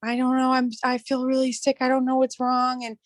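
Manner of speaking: put-on bawling, tearful through every word. Retelling the moment he came back to check, imitating own bawling. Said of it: "I'm like bawling".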